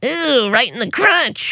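very high, slow, squealing silly game show host voice.

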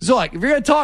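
high, carrying calling out.

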